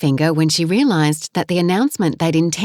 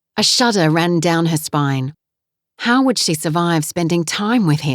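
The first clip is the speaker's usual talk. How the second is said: ordinary delivery, nothing marked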